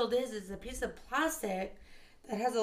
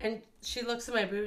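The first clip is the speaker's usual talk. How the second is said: ordinary talk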